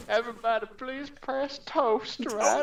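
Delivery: Southern Alabama accent, pitched very high. Asking everyone to press toast, in an alabama accent. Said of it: "Why do I have an Alabama accent right now?".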